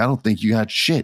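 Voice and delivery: ordinary delivery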